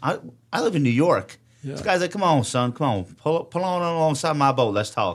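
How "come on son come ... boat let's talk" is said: put-on Southern accent. Recounting what a cop by his boat said to him, imitating a Southern accent. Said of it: "he had a southern accent".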